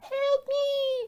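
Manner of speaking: very high mock screaming. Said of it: "They're, like, screaming out".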